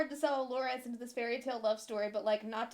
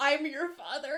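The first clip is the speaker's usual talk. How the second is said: ordinary delivery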